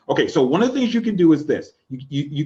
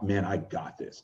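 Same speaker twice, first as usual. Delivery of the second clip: very quiet, low, hushed, certain, confident voice; 8 semitones lower, 12 dB quieter than usual. Speaker demonstrating their own inner voice to an audience, confident inner voice. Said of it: "That's how I would sound".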